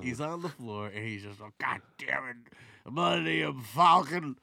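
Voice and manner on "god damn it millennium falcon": booming, drawn-out, slowly belted voice. Acting out an actor lying on the floor: Harrison Ford impression. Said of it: "That's my Harrison Ford".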